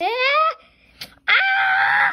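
high-pitched, loud, pained scream.

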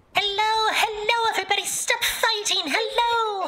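silly, very high, squeaky voice.

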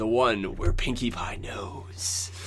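dramatic announcer-style read. The speakers discuss an episode title; one reads it in a dramatic announcer voice. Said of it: "dramatic. ... Announcer voice".

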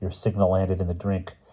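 plain reading voice

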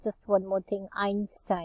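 normal talking voice

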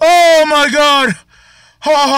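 trembling with excitement. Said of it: "I'm still shaking".

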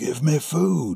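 rasping, hoarse, high-pitched voice. A man who has just come in on the startled farmer speaks hoarsely. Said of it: "the other said hoarsely".

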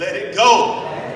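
loud, emphatic declaration, said like it's meant.

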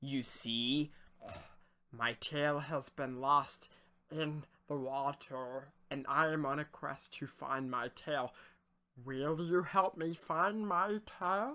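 wet, gurgling fish creature voice. A narrator voices a salamander man speaking to a fisherman, in a gurgly fishy voice. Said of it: "He exclaimed in a gurgly fishy tone".

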